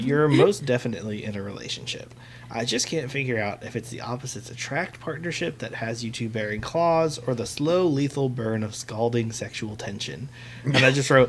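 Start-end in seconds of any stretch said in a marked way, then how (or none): none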